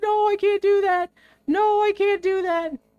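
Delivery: play-acted very high, tearful sobbing. Retelling a man at the edge of a two-by-four answering his wife, imitating someone crying. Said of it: "like literally just crying".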